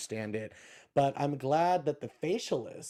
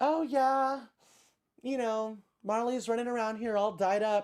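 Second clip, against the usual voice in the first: put-on offhand casual tone, higher pitch; 8 semitones higher than usual. Retelling how Sonja talked about her dog: imitating Sonja playing it casual. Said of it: "trying to play this off so casual".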